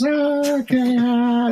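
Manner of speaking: put-on gentle folksy voice. Imitating a friend's way of talking: imitating Jerry's Orson Bean-like voice. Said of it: "he talked like this. He had this very kind of Orson Bean-like voice".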